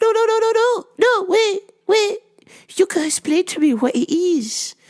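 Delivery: very high-pitched voice. Retelling what a customer said, imitating her like Miss Juan. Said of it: "to a T".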